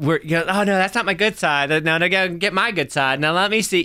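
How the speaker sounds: high, vain, preening show-off posing voice. Speaker acts out audience members at a show doing the selfie thing, mocking a selfie-taker. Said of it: "they're doing the whole selfie thing".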